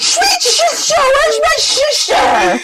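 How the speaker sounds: put-on high-pitched drunken shouting.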